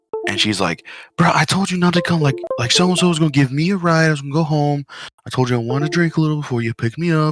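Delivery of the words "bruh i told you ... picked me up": high-pitched, nonstop mock yelling tirade. Retelling what she yelled from inside the car: imitating someone yelling. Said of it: "She's literally yelling at me".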